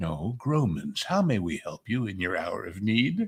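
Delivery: put-on funeral-home receptionist phone voice. Speaker retells father answering callers as the mortuary company: Grauman's mortuary phone voice. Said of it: "my father would put on his voice and go".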